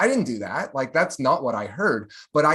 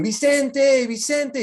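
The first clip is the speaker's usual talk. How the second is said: mock very high, loud yell; 11 semitones higher than usual. Retelling how a man called him from outside his apartment, retelling a yell. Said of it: "He's yelling".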